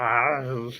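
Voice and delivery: put-on cartoon character voice. Imitating Stitch saying hi at the movie, Stitch voice. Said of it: "that's my impression of Stitch saying hi at the movie".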